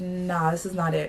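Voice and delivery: normal talking voice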